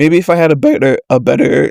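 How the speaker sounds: voice breaking. Talking about podcast recording gear, own voice cracking mid-sentence. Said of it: "Did you hear my voice crack?".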